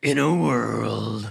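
rough epic trailer narrator voice, "world" drawn out. Starting a podcast trailer when asked to do the voice: movie trailer voice. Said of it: "Do your voice".

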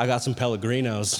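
low, pushy drug-dealer voice. Retelling a cashier's reply, said like a drug dealer. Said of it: "he said it like a drug dealer".

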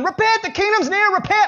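wild, high, crazed screaming cry. Retelling how John the Baptist came out of the womb: imitating John the Baptist screaming. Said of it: "he comes out of his mother's womb and he's screaming".

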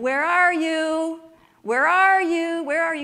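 high, very loud, long, drawn-out calling. Retelling how a woman on a porch called out to her animals: imitating someone yelling. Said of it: "she started yelling".

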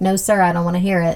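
ordinary delivery

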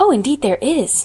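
eager, cried-out exclamation. Anne answers Miss Eliza, who says there is no bright side: cried out. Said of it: "cried Anne".

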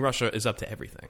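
plain

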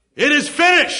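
ringing, loud, high-pitched cry. Preaching on Matthew 27, acting out the words cried from the cross: re-enacting a loud cry. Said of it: "cried with a loud voice".

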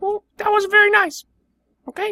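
shrill, squeaky, very high, loud put-on character voice. Reply to the person who just kicked you out of the car, in a high put-on voice. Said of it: "I'll go back to the old voice".

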